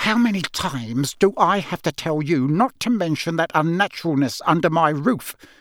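furious, angry hiss. Narrating a man's outburst at a boy, angry hiss. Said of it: "he hissed".

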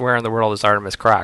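ordinary talk

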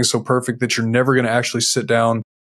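normal talking voice

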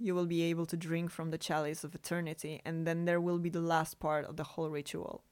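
plain reading voice

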